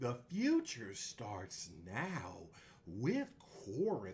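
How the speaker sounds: mock, overblown, swooping salesman delivery. Repeating a man's line to mock his over-exaggerated way of talking. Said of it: "his over exaggerated".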